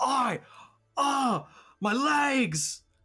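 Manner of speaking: slow, very high, drawn-out pained screaming. A character falls to the ground with a broken leg, screaming. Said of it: "He falls to the ground screaming, / you can kind of see a little bit of bone jutting out of one".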